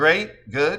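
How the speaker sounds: ordinary delivery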